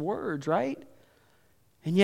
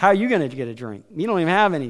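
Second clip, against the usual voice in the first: fast, sarcastic retort. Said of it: "she gets sarcastic really fast".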